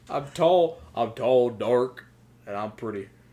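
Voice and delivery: fake, put-on rural country accent. Repeating his self-description, now in a put-on country accent. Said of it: "like a dark or a country accent".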